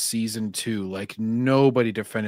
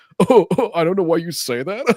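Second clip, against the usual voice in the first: high, loud cry-laughing; 7 semitones higher, 6 dB louder than usual. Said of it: "how many of his cry laughs he would have to do".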